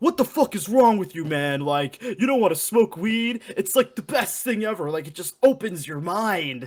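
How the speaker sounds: high, mad yelling. Retelling how she yelled at him for turning down weed, retelling her angry yelling. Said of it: "she starts yelling at me and getting mad".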